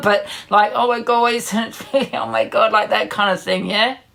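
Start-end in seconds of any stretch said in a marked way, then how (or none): 0.7-2.7 awkward, nervous laughter through the words. Showing what a nervous laugh sounds like: demonstrating a nervous laugh. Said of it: "That's a nervous laugh".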